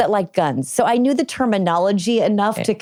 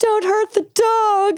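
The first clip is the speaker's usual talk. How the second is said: mock very high, very slow, drawn-out scream; 13 semitones higher than usual. Retelling a raid by agents, imitating her own scream. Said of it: "I just remember screaming".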